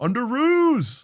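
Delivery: loud call pitched very high. Retelling a tense movie standoff, a hero calls for help: imitating Tony Stark calling out. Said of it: "He goes".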